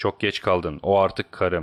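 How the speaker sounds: ordinary delivery, nothing marked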